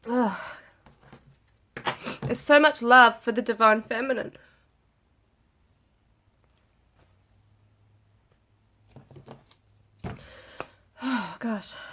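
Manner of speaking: tearful, crying through the words. Doing a card reading for viewers on video, crying while talking. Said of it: "these tears won't stop".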